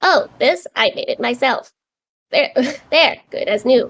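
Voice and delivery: machine-like, mechanical robot voice with back-and-forth rhythm. Player showing how they'd voice a new construct character: higher-pitched robotic voice. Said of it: "Like kind of that like robotic back and forth".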